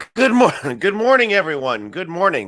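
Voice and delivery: sick-sounding voice. Greeting everyone at the start of the morning, voice sounding sick. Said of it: "I hear it in my voice right now".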